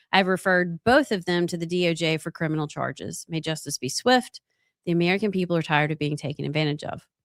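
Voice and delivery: ordinary talk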